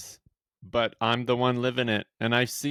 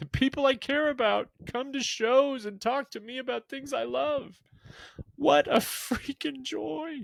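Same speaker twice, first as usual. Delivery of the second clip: tearful, much higher pitch; 13 semitones higher than usual. Speaking about loved ones coming to the shows, crying while talking. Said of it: "Certainly was not intending to start crying".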